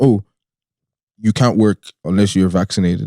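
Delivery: ordinary delivery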